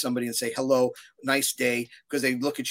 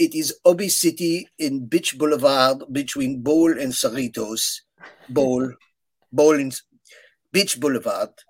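loud, put-on French accent; 5 dB louder than usual. Retelling what she would say on the phone, imitating her French accent. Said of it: "I have a very good French accent now".

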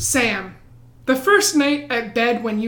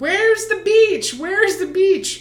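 high, acted-out drunken hollering, repeated; 8 semitones higher than usual. Retelling someone running down the boardwalk, imitating someone drunk yelling. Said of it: "she's running down the boardwalk yelling".

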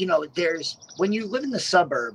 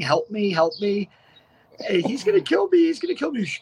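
mock desperate screaming, high and rising; 5 semitones higher, 3 dB louder than usual. Describing a movie, speaker acts out a man in handcuffs: imitating someone screaming. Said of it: "He's like screaming".

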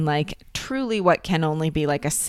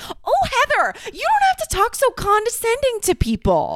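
mock, very high, drunken barking outburst; 4 dB louder than usual. Recapping a party confrontation, imitating Shannon snapping at another woman, drunk barking. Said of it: "starts barking at Heather".

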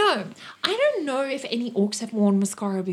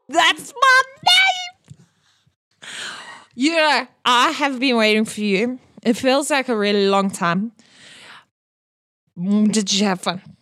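put-on drunk character voice, louder; 6 dB louder than usual. Voicing a drunk party guest greeting a player: drunk character voice. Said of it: "he is actually quite drunk".

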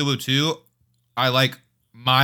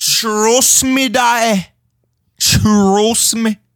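high, loud, hammed-up mock British accent. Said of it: "I can't tell what accent you're going for".

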